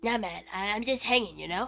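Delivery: relaxed, laid-back character voice. Voicing a stranger character in a story game: lazy Cartman voice. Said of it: "Lazy Cartman, don't yell".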